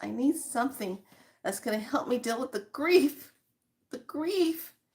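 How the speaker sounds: high, tearful, play-acted voice on the verge of sobbing. Retelling what a young woman said while getting help; imitating someone near tears. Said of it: "getting ready to start sobbing and crying".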